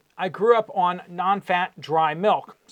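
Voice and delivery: ordinary talk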